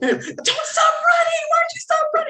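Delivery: very high screaming, climbing upward. Recalling yelling at a character on tv during a show: retelling screaming at the tv. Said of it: "I was literally on my feet screaming at the TV".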